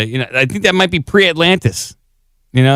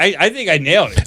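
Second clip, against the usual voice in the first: ordinary talk, nothing marked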